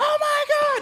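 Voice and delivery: loud, very high-pitched, shrieking overexcited scream. Describing an older sister's reaction to prize calls, imitating an overexcited scream. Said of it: "super overexcited about it and like screamed".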